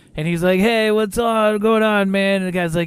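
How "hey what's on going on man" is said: high, slow, drawn-out hippie drawl. Retelling a movie scene where a guy comes out: imitating a hippie guy. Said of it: "super, like, hippie guy, and he's like".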